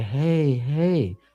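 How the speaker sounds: unsettling, creepy, too-soothing, coaxing voice. Retelling a man who comes into the kitchen and sees them, creepy voice. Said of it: "creepy ass voice".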